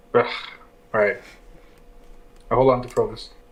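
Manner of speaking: resigned, reluctant, giving-in tone of voice. Told the rider will fall and die without support, the speaker gives in, resigned. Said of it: "I like the resignation in your voice there".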